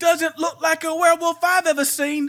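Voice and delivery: put-on British accent. Acting out a court crowd extra in an imagined movie: English accent. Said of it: "Where the hell is the English accent coming from?".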